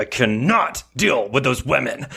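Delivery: put-on snarl through clenched teeth. Speaker retelling approaching Shannon Beador, imitating her snarling through her teeth. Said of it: "she kind of like snarls through her teeth".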